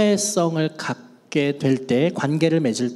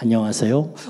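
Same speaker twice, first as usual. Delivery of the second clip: low, deep, trust-inspiring bass voice; 5 semitones lower than usual. Explaining that a low voice builds trust, greeting: low deep voice. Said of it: "낮은 저음으로 얘기하면 신뢰감이 높아져요".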